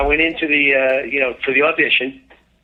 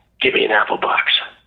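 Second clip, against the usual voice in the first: put-on whisper, lower; 4 semitones lower than usual. Retelling a photo session, quoting a request to the A D: imitating someone whispering. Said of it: "He whispers to the".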